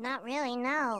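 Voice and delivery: high, quiet, reluctant voice.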